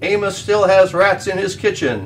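booming, high, loud cook's voice. The cook searches the dark corners for the cat, booming. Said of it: "he boomed".

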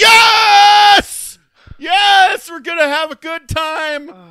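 very loud, high, stretched-out, drawn-out scream. Retelling a scene where a nervous character finally answers, acting out a scream. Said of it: "he finally screams".

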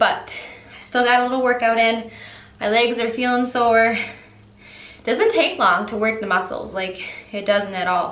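fast, winded, panting, breathing hard between words. Vlogger just finished a short workout, talking to viewers: out of breath. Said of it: "I'm so out of breath".

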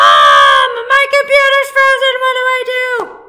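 shrill, swooping holler, very high and loud. Speaker acts out the listener yelling for Mom over a frozen computer: imitating a yell for Mom. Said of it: "when your computer freezes and you're like".

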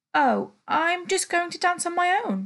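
spluttering. Narrator voices a boy replying to his mum: spluttering. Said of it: "he spluttered".

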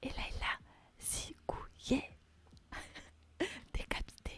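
whispering. Streamer telling the chat a story, whispering. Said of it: "je raconte une histoire en chuchotant comme ça".

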